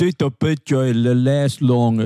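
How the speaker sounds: mocking put-on Long Island accent. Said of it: "That's me doing you".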